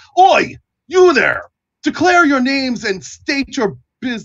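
very high-pitched calling out. Narrating a guard on a watchtower hailing the approaching party, hailing from a watchtower. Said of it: "the guard on one of the towers hails you".

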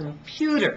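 computer said with the middle syllable -pu- stressed. Explaining word stress, stress on middle syllable of computer. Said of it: "I only stress one of them. ... It's the middle one".

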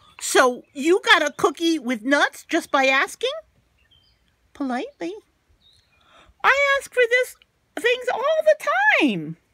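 squeaky, very high cartoon pigeon voice. Reading a story aloud, voicing the pigeon: pigeon character voice. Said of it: "I'm the askingest pigeon in town".

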